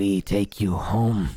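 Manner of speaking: otherworldly creature speaking voice. Voicing a green-skinned creature telling the party it will take them home: voicing a green-skinned creature. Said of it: "tilts its head again and says".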